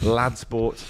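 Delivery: plain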